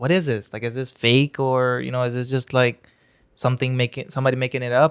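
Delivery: ordinary delivery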